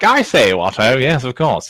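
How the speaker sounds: fake British accent, laid on thick. Imitating how Mr Foster talks: Mr Foster's fake British accent. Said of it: "that like fake British accent of his".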